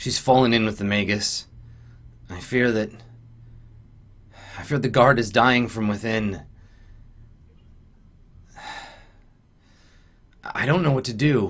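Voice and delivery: secretive, conspiratorial tone. Storyteller voicing a character who looks around, speaking conspiratorially. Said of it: "looks around conspiratorially".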